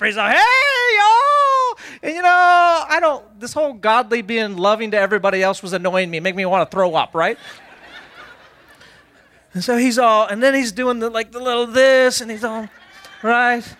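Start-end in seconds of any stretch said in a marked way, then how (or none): 0.4-1.8 very high, loud, chipper, chirpy mock voice. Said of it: "he shows up all chipper".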